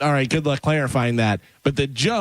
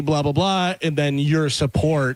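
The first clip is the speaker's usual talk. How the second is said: ordinary talk, nothing marked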